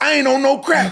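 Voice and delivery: furious shout, very high and very loud. Retelling a phone call where James Toney denied being on crack: imitating James Toney cussing him out. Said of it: "And he cussed me out".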